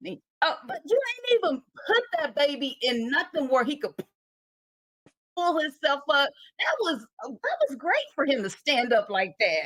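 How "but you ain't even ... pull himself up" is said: mock, heated, yelled outburst. Retelling yelling at the tv about a baby: retelling own yell at the tv. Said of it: "I was yelling at the T V like".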